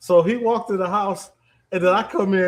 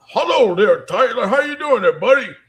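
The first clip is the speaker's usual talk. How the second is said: put-on loud elderly man voice; 4 semitones higher, 5 dB louder than usual.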